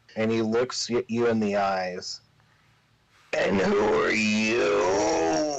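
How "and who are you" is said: very slow, strained, each word dragged through gritted teeth. Game narrator voicing the wounded Grimbo facing the player, gritting through the pain. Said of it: "gritting his voice through the pain".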